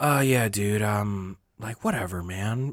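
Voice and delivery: mock exhausted, drained-sounding voice. Retelling the other speaker's answer from the other night: imitating someone sounding drained. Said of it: "I could just tell you were drained".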